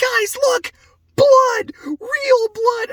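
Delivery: very high, drawn-out, super excited delight. Imagining a ghost scene, the speaker acts out Velma spotting a zombie: imitating Velma, super excited. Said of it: "Velma just super excited".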